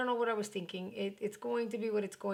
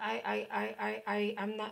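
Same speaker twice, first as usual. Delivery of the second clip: very slow stutter, repeating "I". Explaining a decision to let someone have his way, stuttering. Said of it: "I'm stuttering".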